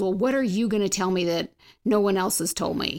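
put-on angry woman voice. Retelling what a counselee asked at their first meeting: imitating an angry woman. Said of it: "she was very angry, you could tell".

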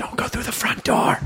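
high-pitched, unvoiced, urgent whisper.

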